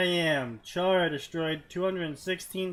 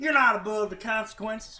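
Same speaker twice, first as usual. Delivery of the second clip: put-on high, loud Southern accent with twang. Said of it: "default to a Southern accent".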